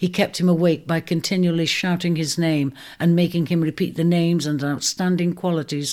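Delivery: ordinary delivery, nothing marked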